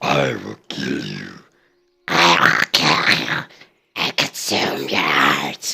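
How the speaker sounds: hushed, breathy, menacing troll whisper. Showing how the trolls should be voiced, in a troll voice. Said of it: "that's a fucking troll".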